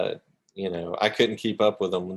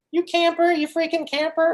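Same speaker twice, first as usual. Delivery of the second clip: put-on squeaky, very high eight-year-old boy's voice. Speaker imitating young boys insulting players in game chat, little boy voice. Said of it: "they've got these little voices like this".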